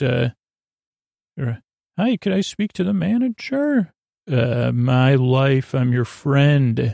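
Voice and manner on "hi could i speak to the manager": put-on phone voice, pitched up high. Speaker demonstrates the voice they use on the phone: high phone voice. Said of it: "That's my high voice".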